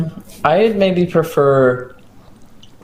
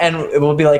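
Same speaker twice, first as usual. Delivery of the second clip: ordinary talk, nothing marked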